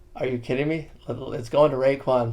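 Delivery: normal talking voice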